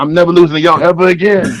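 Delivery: put-on little raspy voice. Retelling what Chuck said walking through the line: imitating Chuck's little raspy voice. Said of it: "with that little raspy voice".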